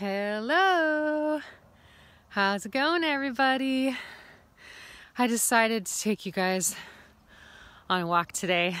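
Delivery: out of breath. Vlogger greeting viewers while taking them on a walk, out of breath. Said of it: "I'm a little out of breath".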